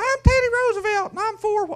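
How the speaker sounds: shrill, loud, very high voice. Describing old recordings, imitating a shrill high-pitched Teddy Roosevelt voice. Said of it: "really shrill and high-pitched and like".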